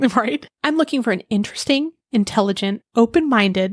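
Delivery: plain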